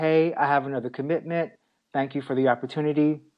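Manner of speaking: plain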